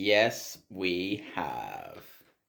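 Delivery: menacing villainous delivery, low and swooping sinister tone. Agreeing that both have worked closely with musical theatre people: sinister tone. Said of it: "you said that so sinisterly".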